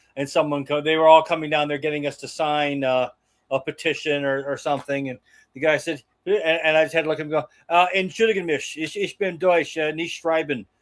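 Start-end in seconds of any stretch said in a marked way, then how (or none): 8.0-10.7 clumsy, halting, really bad put-on German accent. Retelling pretending to be german to a petition collector: imitating own bad german accent. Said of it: "I do speak with a really bad German accent".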